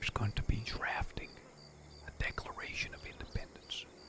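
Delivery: very high, hushed, conspiratorial whisper. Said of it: "Please tell me to whisper".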